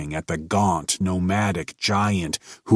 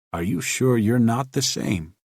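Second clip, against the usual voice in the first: purred, cat-like; 3 semitones higher than usual. A narrator reads the scholar's question to the giant, purring. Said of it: "Purred the scholar".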